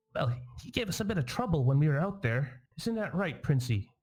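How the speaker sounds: very squeaky, high little fairy voice. Voicing a little fairy buzzing around and addressing the group, very squeaky fairy voice. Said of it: "in a very squeaky voice says".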